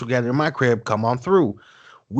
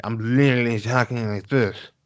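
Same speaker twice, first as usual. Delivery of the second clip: put-on drunken slurred speech. Retelling being drunk on a phone call, imitating drunk slurring. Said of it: "I'm slurring".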